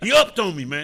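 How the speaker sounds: very loud, high, thrilled excited outburst. Showing how clients say the phrase: mock excited utterance. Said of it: "usually said with some excitement".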